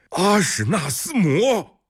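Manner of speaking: astonished, surprised cry, very high-pitched. Everyone cries out together as a travel-worn man is led in, exclaiming in surprise. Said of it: "众人一起惊呼".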